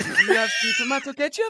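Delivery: voice shot up very high. Imitate how Gendle asks for tomato ketchup in any foreign country, in a very high-pitched Gendle voice. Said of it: "His voice goes 8 octaves higher".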